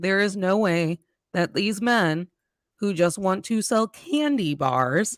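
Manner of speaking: ordinary talk, nothing marked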